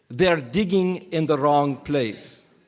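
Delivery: British-flavoured, put-on Egyptian accent. A speaker shows group two the line they will say, in a fake Egyptian accent. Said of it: "whatever accent I just tried to emulate there".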